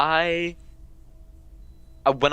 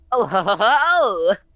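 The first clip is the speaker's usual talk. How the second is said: high, slow chuckle.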